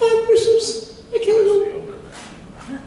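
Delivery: very high, slow voice.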